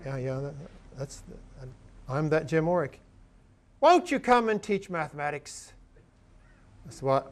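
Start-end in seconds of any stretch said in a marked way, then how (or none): 3.8-5.7 put-on British accent, much higher, slower. Retelling what someone once said to him, in a british accent. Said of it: "in a British accent said".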